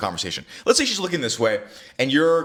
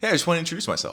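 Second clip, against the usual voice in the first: warm, bright, upbeat friendly tone; 4 semitones higher than usual. Demonstrating how to introduce yourself, friendly, upbeat, smiling. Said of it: "I would be in an uppy tonality, and I would smile. ... You see how friendly that is?".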